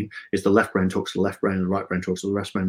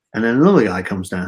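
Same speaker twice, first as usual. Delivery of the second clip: ordinary delivery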